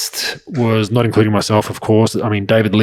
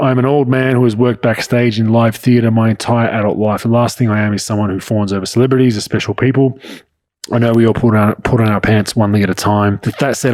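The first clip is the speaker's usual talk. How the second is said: ordinary talk, nothing marked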